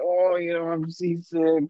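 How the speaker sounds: play-acted, slow, drawn-out, whiny complaining drone. Retelling a fishing trip with a group of guys, imitating their whining. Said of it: "they're all whining".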